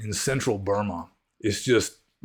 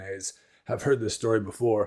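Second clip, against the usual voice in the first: ordinary talk, nothing marked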